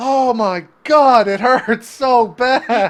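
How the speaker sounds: ogre howling, very shrill, loud, drawn out, pained. Voicing a wounded ogre lying on his back: ogre shrieking in pain. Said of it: "he's just shrieking in pain".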